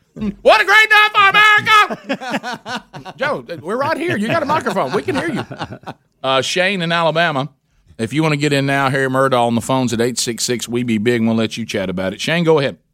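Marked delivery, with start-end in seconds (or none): 0.2-3.1 very high, very slow, drawn-out hollered scream. Imitating a politician screaming through a speech: imitating Joe Biden screaming. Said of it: "he screams the entire time".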